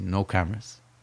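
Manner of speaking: quiet, soft, firm delivery.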